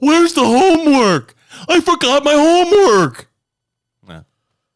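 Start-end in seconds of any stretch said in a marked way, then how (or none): 0.0-3.3 very high, loud, dopey cartoon voice, belted out. Trading cartoon voices with the others, doing a Patrick Star voice. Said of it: "Why can't I do a Patrick Star?".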